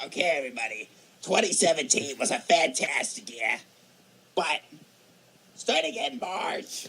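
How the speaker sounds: put-on cranky, grumpy old man voice with Brooklyn accent. Summing up twenty seventeen after being asked to: grumpy old Brooklyn guy voice. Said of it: "sum up twenty seventeen in that voice".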